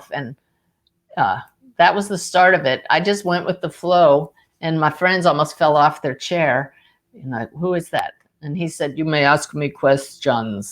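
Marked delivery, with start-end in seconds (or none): 9.0-10.7 put-on masculine Russian accent, slower pace. Retelling a voice that made friends nearly fall off their chairs: masculine russian accent. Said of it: "this masculine voice with a Russian accent".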